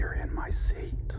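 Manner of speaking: soft, hushed, unvoiced whisper.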